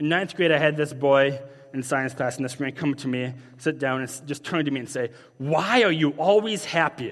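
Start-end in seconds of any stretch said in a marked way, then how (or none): 5.4-7.1 slow, angry, pointed tone. Retelling what a boy in science class asked: imitating an angry boy. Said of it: "he said this very angry".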